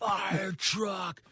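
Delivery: high, all-out scream at the top of the lungs. Retelling screaming a chosen word at a kid during filming: imitating own scream. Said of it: "I start screaming as loud as I can".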